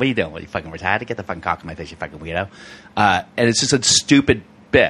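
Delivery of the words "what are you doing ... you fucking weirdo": soft, rattled-off put-on Boston accent. Doing a bit contrasting city accents, now in a boston accent. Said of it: "Boston's like".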